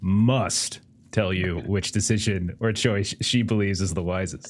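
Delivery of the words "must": emphasizing the word "must". Player explaining a spell's rule to the group, stress on 'must'. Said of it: "I'm gonna emphasize this word".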